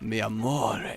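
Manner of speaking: deep, seductive Spanish-style voice. Showing the voice that goes with a guitar strum: deep, almost Spanish sexy voice. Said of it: "my attempt at, like, a sexy voice".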